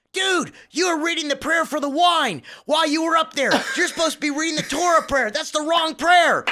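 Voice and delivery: very high, shrill, loud screaming rant. Retelling a friend's call once the episode came out, imitating Danny screaming. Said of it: "He's screaming at me".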